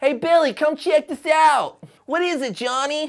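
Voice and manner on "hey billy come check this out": put-on 1940s New York accent, higher and louder. Acting out a scene, one character calls Billy over, in a 1940s New York accent. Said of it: "It's my 40s New York impression".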